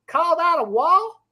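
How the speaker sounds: clumsy fake New York accent. Trying an accent for the audience, a bad new york accent. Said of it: "can we do a New York accent?".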